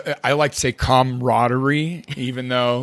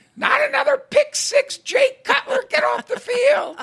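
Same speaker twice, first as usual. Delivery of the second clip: very high-pitched put-on yelling, heckling tone. Retelling a wife yelling at the tv: imitating wife yelling. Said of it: "you could hear a block away yelling".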